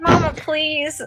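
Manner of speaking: embarrassed, flustered pleading. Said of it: "You're embarrassing me".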